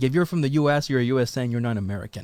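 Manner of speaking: ordinary delivery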